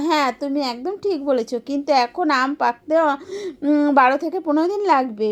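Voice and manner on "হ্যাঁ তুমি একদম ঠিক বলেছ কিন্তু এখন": usual speaking voice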